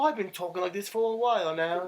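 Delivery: fake, affected British accent, very high and loud. Retelling how Brian came back from Europe talking differently, doing his fake British accent. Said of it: "why are you talking like that".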